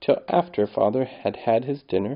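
ordinary delivery

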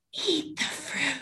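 put-on whispered, high, toddler-like snake voice. Retelling how Jack played with a stuffed snake, imitating Jack's whispered snake voice. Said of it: "he just whispers in her ear in his little snake voice".

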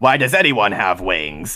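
nasal cartoon-villain voice. Retelling a tiger's reply from an old Japanese cartoon, nasal cartoon-villain voice. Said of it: "like they're they're holding their nose".

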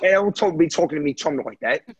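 put-on English accent on every word. In a role-played car stop, the person pulled over answers the officer, english accent. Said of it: "I can never keep up an English accent like that".

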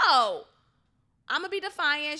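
mock loud yell. Describing a woman refusing to give up her bus seat, retelling a yell. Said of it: "she yelled".

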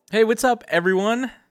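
very high, gushing, hyped-up, overexcited voice. Redoing an episode intro, the host greets everyone, too excited. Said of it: "Don't sound too excited".

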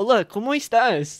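very anglicized Spanish, high pitch.

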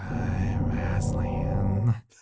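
eerie, creepy, very low, deep whisper. Imitating the actor who voiced Aslan on stage, creepy whispered Aslan voice. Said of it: "he would always talk this really creepy whisper".

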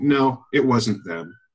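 put-on completely deadpan, flat delivery. Recounting a funny bit where someone asked about the saviors: retelling a completely deadpan reply. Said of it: "It just completely deadpan".

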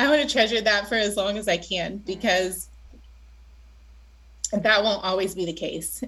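voice catching, choked up, on the verge of crying. Talking about getting to be part of the school, on the verge of crying. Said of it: "I'm going to cry now".

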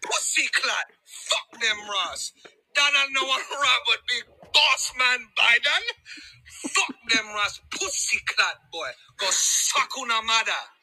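put-on Jamaican patois accent.

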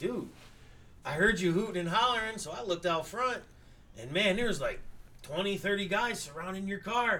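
ordinary talk

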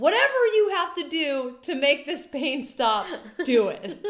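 very loud, high, all-out screaming. Retelling demanding pain relief from the on-call doctor, re-enacting her own screaming. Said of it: "So I'm like screaming at this poor woman".

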